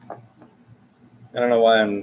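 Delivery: normal talking voice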